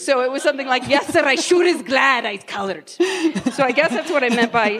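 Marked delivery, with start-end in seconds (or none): 0.9-2.9 put-on brogue accent. Recalling a maid role whose dialogue she delivered in a put-on brogue. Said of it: "But I said them with a brogue".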